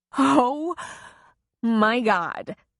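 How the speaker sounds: weak rasping voice, helpless with hysterical laughter. She speaks to Troy while pulling him back to the Jeep; weak rasp, hysterical laughter. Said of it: "she rasped weakly, still hysterical with laughter".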